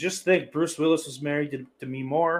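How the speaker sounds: usual speaking voice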